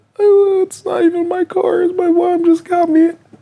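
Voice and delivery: sobbing, very high-pitched and drawn out. Retelling what the crying driver said: imitating someone crying. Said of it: "she cried, she cried".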